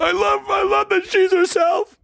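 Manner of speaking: very high, hoarse, shrill, raspy screaming. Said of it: "I'm screaming".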